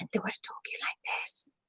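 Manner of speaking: very soft whisper, almost no voice, barely audible. Demonstrating how a presenter talks to a big conference crowd: whispering. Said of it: "really whispering".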